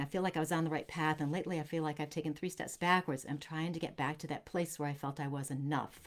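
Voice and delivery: ordinary talk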